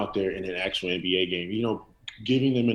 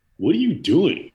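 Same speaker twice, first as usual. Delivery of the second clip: loud, raised, high exasperated callout; 7 semitones higher, 7 dB louder than usual. Showing people what Michael Martin says whenever he sees something stupid, in Michael Martin's tone of voice. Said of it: "I don't know if I said that in his tone of voice".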